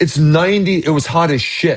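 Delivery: ordinary talk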